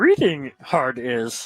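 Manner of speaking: loud sage voice with swooping pitch. Joking about misreading a betting line, in a Yoda voice. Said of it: "Talking like Yoda".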